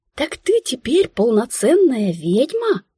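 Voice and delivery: high exclamation full of wonder and admiration. Her new acquaintance exclaims to the narrator, admiring exclamation. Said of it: "восхищенно воскликнула".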